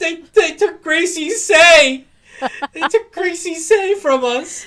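play-acted very high, very loud choked-up cry. Reacting to bombshell news about a favorite character, choked up. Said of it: "I'm getting choked up".

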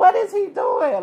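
mock shocked yell, high, loud and slow.

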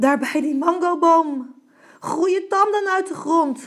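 out of breath. A baboon races back to a pig and reports what he saw, panting. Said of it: "hijgde baviaan".

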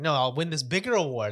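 ordinary talk

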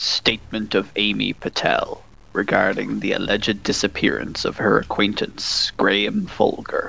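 narrator voice, creaky. Asked by a co-host to open the episode summary: Jon impression. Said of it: "in your best John impression".

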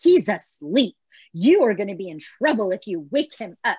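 put-on commanding, firm, no-nonsense, authoritative tone. Retelling how a woman warned a security guard, in an authoritative voice. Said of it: "she used a very authoritative, like, voice".

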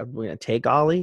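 normal talking voice

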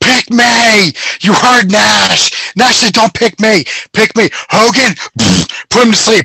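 mock wild, worked-up screaming, high-pitched half-yell. Recalling what Piper said, Piper impression, screaming. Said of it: "where he's just screaming".

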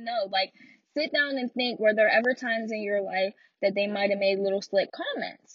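ordinary talk

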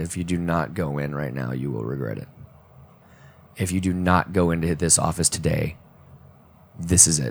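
gentle, soft, low, soothing, calming voice. Retelling the inner voice urging him into the office, retelling a soft, calming voice. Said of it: "this very soft, calming voice".

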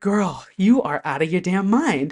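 ordinary delivery

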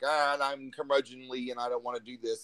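ordinary talk

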